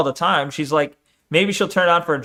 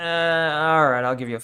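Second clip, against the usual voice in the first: mock grudging, obligatory-sounding tone; 3 dB quieter than usual. Commenting on how a woman in the chat responded, imitating an obligatory tone. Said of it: "sounded more obligatory".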